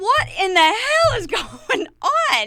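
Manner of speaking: very high, wild, swinging, swooping scream. Retelling being whipped behind a tent at night: imitating own screaming. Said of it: "I'm just screaming, going".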